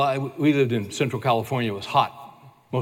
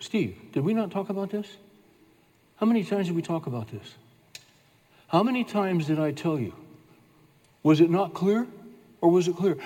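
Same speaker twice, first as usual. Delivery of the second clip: put-on calm voice, higher; 5 semitones higher than usual. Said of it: "He's just very calm".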